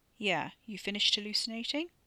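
ordinary talk

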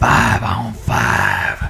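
very deep, low, creaky, seductive sexy rumble. Finishing reading a dealership review aloud, in a sexy voice. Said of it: "Is that like your sexy voice?".

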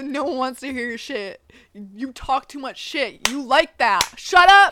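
mimicked angry outburst. Retelling what was said in an argument: imitating own angry words. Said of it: "I was so pissed".

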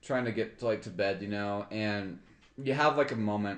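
ordinary delivery

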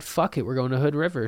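ordinary delivery

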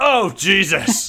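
shrill, very loud, high-pitched character outburst. Reacting to a giant foot slamming down, said in character. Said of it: "In character, thank you".

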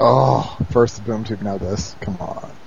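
put-on dejected hero voice. Recapping an episode and quoting a line, dejected Batman impression. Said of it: "He says it so dejectedly".

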